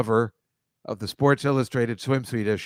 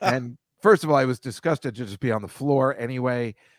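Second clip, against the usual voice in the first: ordinary delivery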